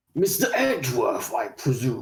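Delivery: deep put-on character voice. Trying out a character's line in a deep voice: deep put-on character voice. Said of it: "I need to deepen that".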